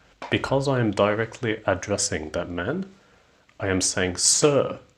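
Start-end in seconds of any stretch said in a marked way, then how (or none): 4.2-4.7 "sir" said with a high, rising tune. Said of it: "with a rising intonation to capture his attention".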